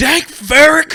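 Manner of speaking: put-on furious grumpy old-man yell, very high and loud. Retelling the dad's first line on the beach: imitating a pissed-off old dad. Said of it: "old man pissed off dad immediately".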